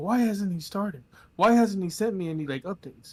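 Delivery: put-on yelling. Retelling how a friend was yelling about a late commission: imitating someone yelling. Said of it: "yelling at me".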